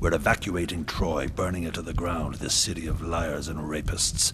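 plain

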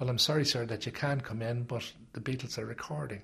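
normal talking voice

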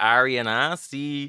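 thick, loud Irish Dublin accent. Guest saying their drag names aloud for the host, in a Dublin accent. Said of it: "say it with like a Dublin accent".

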